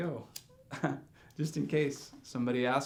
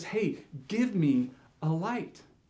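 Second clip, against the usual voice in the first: slow, blunt, sure, matter-of-fact, pitched up; 5 semitones higher than usual. Retelling a stranger's ask for a light: imitating a convinced, blunt request. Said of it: "so convinced that I had what he needed".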